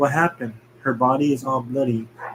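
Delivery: plain reading voice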